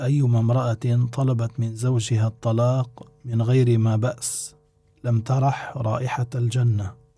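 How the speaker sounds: plain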